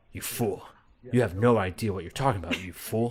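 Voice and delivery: put-on, very British character voice. Describing what a character says every time he talks, in a very British voice. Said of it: "very British".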